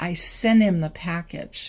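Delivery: smooth, connected flow, words run together a bit. Like a language teacher speeding up the same sentence so students hear sounds blur together naturally. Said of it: "a little bit slower".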